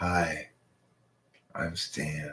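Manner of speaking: low, very soft, hushed, creepy barfly voice. Acting out a creepy guy at the bar approaching: creepy guy at the bar voice. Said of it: "Creepy guy at the bar coming up and touching my shoulder".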